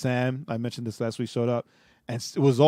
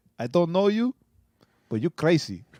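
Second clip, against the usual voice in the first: put-on broken English spoken with an Arabic accent; 5 semitones higher than usual. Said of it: "'cause he had the accent".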